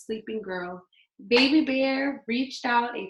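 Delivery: plain reading voice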